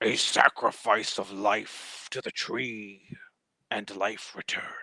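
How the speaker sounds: otherworldly, eerie, ghostly unearthly voice. Narrator describing what the players hear as they walk through, unearthly voice. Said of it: "you hear in an unearthly voice".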